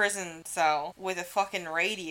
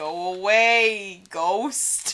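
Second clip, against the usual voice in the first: put-on loud Brooklyn accent with "away" drawn out long; 5 dB louder than usual. Acting out Al Capone answering the ghost of a man he killed, Al Capone voice with Brooklyn accent. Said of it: "that's what Brooklyn sounds like".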